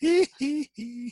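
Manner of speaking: high, loud "he he he" monster giggle.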